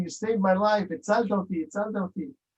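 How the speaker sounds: acted weepy, tearful, crying voice. Retelling a woman thanking the Hatzala volunteer, imitating someone crying. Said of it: "and she's crying".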